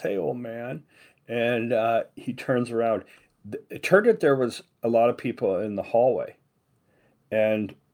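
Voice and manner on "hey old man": normal talking voice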